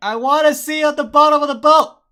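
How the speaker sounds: full-force scream, very loud and high-pitched. Retelling a whisper that grows louder until shouted: retelling a loud shout. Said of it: "he says it so loud".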